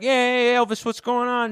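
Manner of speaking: put-on wild, very high-pitched, excitable Italian-accented voice. Retelling Italian callers phoning local radio after the Sopranos finale: imitating wild Italian radio caller. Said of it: "they were just letting Italians go wild".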